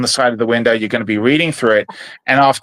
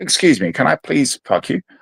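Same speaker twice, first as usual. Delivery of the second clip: put-on nice British accent; 2 semitones higher than usual. Speaker imagines asking someone something in a Hugh Grant style accent. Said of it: "like Hugh Grant style accent".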